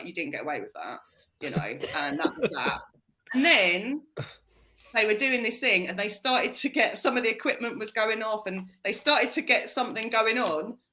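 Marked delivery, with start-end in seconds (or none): 0.0-1.0 put-on mutter under breath, lower and quieter. Retelling a woman's remark to a man who farted: imitating someone muttering under breath. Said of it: "under her breath".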